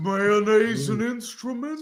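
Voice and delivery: slightly high-pitched cartoon voice. Asked what Patrick Star sounds like, the speaker answers in Patrick Star voice. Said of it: "What does he sound like?".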